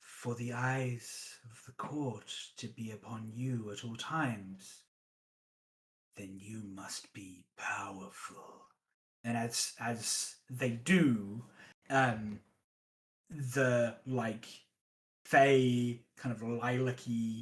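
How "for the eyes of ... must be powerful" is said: low, hushed, very quiet whisper, barely audible. Voicing a figure leaning forward to Yoke: hushed whisper. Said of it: "in,like,a,a,a hushed whisper".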